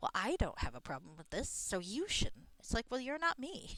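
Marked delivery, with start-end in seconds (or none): 0.0-2.5 imitated judgmental woman's voice. Retelling what a more devout woman said about watching it, mimicking her judgy tone. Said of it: "Just the way she said it was like".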